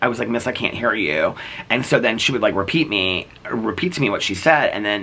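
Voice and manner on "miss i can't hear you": usual speaking voice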